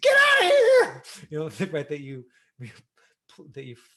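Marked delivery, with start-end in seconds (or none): 0.0-1.0 drawn-out panicked yell, very high and very loud. Explaining acting, the speaker says the line while meaning it: freaking out. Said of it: "I'm freaking out".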